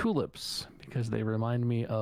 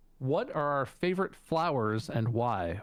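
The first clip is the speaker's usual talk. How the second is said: plain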